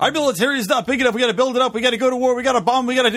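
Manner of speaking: rushed, high, fast whiny bratty talk. Imitating how a candidate talks about the military: imitating Marco Rubio's fast whiny talk. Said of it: "and he talks just like that, too".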